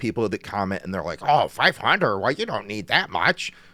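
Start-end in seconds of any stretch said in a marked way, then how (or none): 1.2-3.5 mocking put-on voice, higher pitch. Retelling how commenters reply, impression of a commenter. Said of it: "I really like the impressions here".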